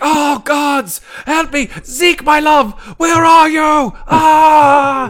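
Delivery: very high, very loud, very slow, shrill, panicked scream. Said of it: "it's just screaming like".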